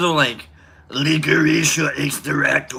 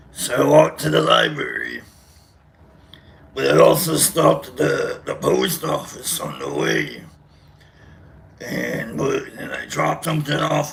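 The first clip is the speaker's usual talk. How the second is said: over-the-top exaggerated put-on voice, creaky. Telling what they did yesterday in a voice: exaggerated put-on voice. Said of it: "I'll just talk about what I did yesterday in the voice".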